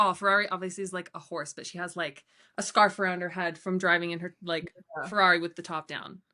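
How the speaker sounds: normal talking voice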